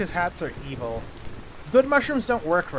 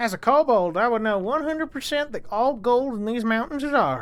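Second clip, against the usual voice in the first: put-on pitched-up cowboy accent that drifts off; 7 semitones higher, 3 dB louder than usual. Playing a kobold claiming the mountain gold, in an attempted cowboy accent. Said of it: "I don't know what accent this is anymore. I was gonna do cowboy".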